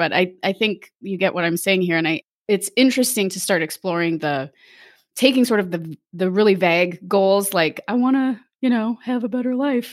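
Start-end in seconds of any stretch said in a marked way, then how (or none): 7.8-9.9 mock, pointed, pitched-up sarcastic tone. Quoting someone's vague life goal: sarcastic quote of a vague goal.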